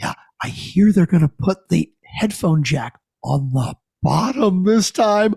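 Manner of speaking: imitated, excited-sounding voice. Retelling an ad with people waiting in a phone line: imitating an excited person. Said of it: "they're so excited".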